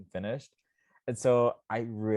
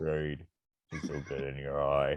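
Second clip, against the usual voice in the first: unfamiliar put-on voice, lower and quieter; 8 semitones lower, 5 dB quieter than usual. Repeating a joke line in a put-on mask voice. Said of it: "That was a voice I don't know I've ever heard from you".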